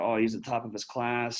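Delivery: ordinary delivery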